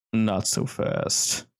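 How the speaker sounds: rough gravel-toned low delivery. Narrator voicing an unseen speaker addressing the player, low gravelly voice. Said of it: "a low, gravelly voice that just says".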